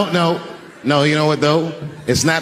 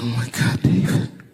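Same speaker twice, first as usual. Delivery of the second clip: put-on sobbing speech, lower pitch; 4 semitones lower, 3 dB quieter than usual. Retelling what his sobbing wife said in the hotel room: imitating someone crying. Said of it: "And she's crying".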